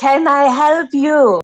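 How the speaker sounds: very slow, pointed, high, drawn-out call. Voicing Misha calling out to an approaching stranger: loud call-out. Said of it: "Misha very loudly will call out".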